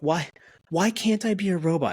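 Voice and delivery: earnest, genuinely worried and concerned tone, pitched high. Retelling how a mom asked why she can't be a robot: imitating someone genuinely concerned. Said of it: "genuinely concerned with why she can't be a robot".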